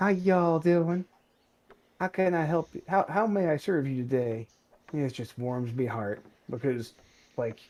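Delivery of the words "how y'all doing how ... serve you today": polite, pitched-up service voice. Retelling how local counter staff greet customers: imitating polite young Chick-fil-A workers. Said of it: "they're all like".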